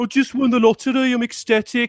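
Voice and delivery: downbeat, depressed Brummie accent. Speaker demonstrates the accent with a sample line: depressive brummie accent. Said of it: "say whatever you want in the Brummie accent".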